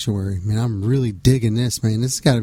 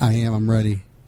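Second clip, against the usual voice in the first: mellow, laid-back radio voice. Asked if he's ready for the SmackDown, answering: mellow voice. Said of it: "You sound so mellow".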